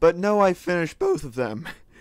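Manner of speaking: voice cracking. Talking to viewers about building farms off camera, voice cracking. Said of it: "my voice is cracking".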